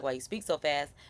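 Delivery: normal talking voice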